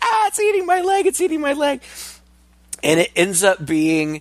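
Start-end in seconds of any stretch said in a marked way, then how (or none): 0.0-1.8 acted, panicked, frantic shriek, very high. Retelling a movie scene where a character freaks out: imitating someone screaming. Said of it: "he's screaming".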